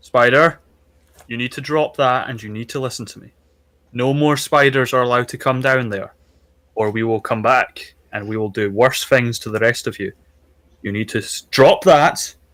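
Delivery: very stern, strict, commanding, no-nonsense tone. Calling out to a spider, in a very stern voice. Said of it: "he says in a very stern voice".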